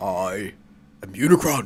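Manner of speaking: very deep giant-villain voice at bottom of range. Answering a name mix-up by speaking as Unicron, in Unicron's voice. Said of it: "I love Orson Welles's like Unicron".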